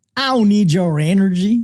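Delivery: put-on Texan accent. Speaking as america after announcing a texan accent: best texan accent. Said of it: "I'm going to do my best Texan accent".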